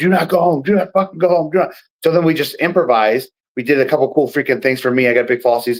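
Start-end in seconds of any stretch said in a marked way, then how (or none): 0.0-1.7 mock referee voice, high-pitched screaming. Retelling a referee's order during a match: imitating a referee screaming. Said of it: "the referee was screaming at us".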